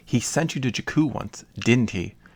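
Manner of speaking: ordinary delivery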